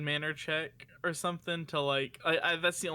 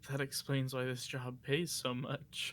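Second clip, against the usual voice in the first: soft, barely voiced mumble under the breath; 2 semitones lower, 5 dB quieter than usual. Voicing a character's aside in a told scene, mumbling under his breath. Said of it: "Vance like mumbles under his breath".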